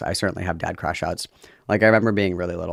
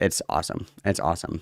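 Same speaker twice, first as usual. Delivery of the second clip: usual speaking voice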